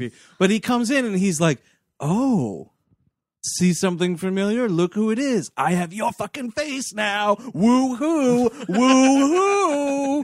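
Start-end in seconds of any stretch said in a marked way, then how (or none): 2.0-10.3 put-on taunting voice, pitched higher. Retelling a movie villain's prison visit: imitating John Travolta taunting. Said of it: ""What are you gonna do about it?"".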